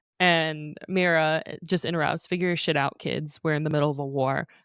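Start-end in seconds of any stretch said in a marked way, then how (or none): none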